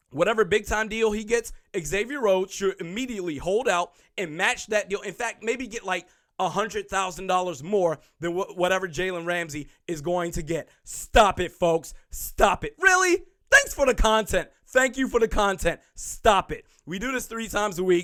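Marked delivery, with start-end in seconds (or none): none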